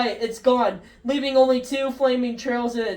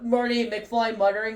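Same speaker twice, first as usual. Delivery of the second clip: plain reading voice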